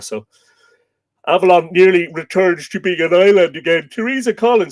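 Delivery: speaking through a yawn. Host on a live stream greeting a viewer, yawning. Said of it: "apologies for the yawning".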